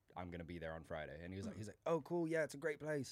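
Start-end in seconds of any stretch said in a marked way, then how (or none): 1.9-3.2 put-on British accent, much higher, slower. Retelling a man's reply after being told you'll be there friday, in a british accent. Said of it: "that was my British accent".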